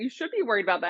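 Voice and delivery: plainly sarcastic, tongue-in-cheek tone. Retelling what they say to people who claim to be the exception: retelling own sarcastic remark. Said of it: "I'm being sarcastic, obviously".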